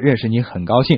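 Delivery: ordinary delivery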